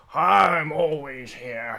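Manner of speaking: put-on old, aged turtle character voice. Voicing an aged turtle calling from a room: aged turtle character voice. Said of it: "he looks a bit aged".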